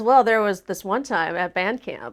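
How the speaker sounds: normal talking voice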